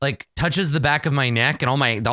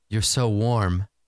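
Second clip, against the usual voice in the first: whispering, much lower pitch; 5 semitones lower than usual. Retelling how a woman put her hand on the narrator's face and whispered. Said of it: "she just whispers".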